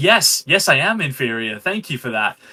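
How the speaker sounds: put-on happily subservient voice. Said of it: "very happy to be Igor".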